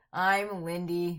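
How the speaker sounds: with reluctance. Introducing herself at the start of the show on her birthday, reluctant. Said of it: "you can hear the reluctance in her voice".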